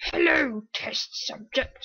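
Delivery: creepy, unsettling, disturbing put-on voice. Reading a game map's story aloud, voicing the disturbing voice. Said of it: "I hate that voice".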